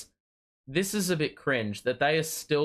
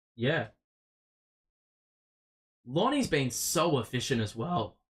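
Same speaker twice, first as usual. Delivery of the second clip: voice cracking and breaking mid-line. Talking about a player's game, the voice cracks mid-sentence. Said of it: "Voice crack, bro".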